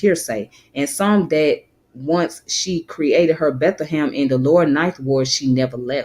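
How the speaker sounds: ordinary delivery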